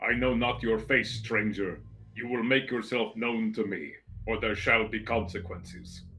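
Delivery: muffled knight voice, smothered as if behind metal. Voicing an armored knight questioning a stranger: booming, muffled knight voice. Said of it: "its voice sort of booming and muffled through its, metal carapace".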